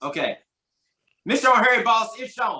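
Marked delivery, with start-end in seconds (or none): 1.3-2.6 rapid delivery, higher and louder. Sounding out a game card as told: saying it fast. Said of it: "sound it out fast".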